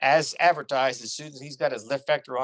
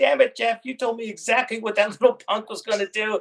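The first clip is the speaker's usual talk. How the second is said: mock full-on ranting yell, high pitched; 9 semitones higher, 5 dB louder than usual. Retelling being yelled at in the debrief, retelling a yell. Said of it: "he's yelling at me going".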